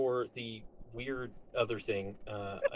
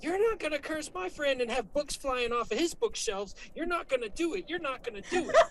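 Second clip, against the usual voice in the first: very high yelling, repeated over and over; 4 dB louder than usual. Describing stabbing and hacking at a cursed object in a game, retelling a yell. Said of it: "the whole time I'm yelling".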